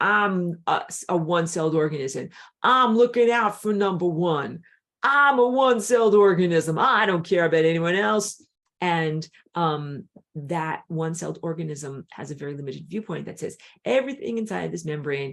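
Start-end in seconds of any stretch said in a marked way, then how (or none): 0.0-8.4 very loud, booming hard-man tough-guy voice. Speaker voices a one-celled organism, in a tough guy voice. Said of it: "my tough guy voice".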